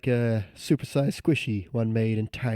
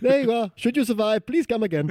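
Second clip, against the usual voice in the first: put-on Indian accent, very high-pitched; 10 semitones higher than usual. Acting out a quoted farewell line; Indian accent. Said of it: "You actually do a pretty good Indian accent".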